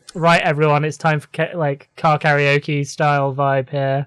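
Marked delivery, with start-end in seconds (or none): none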